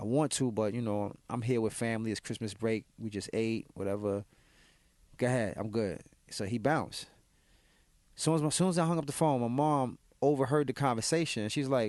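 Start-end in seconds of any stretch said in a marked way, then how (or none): none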